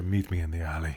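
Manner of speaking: low, hushed half-whisper. After a good fight, an opponent half-whispers in your ear; half-whispering. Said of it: "He whispers in your ear".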